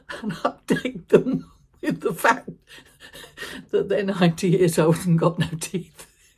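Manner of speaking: words breaking into laughs, talking through laughter. Recalling phone updates to siblings during hard times, laughing while talking. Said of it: "I find I'm laughing too much".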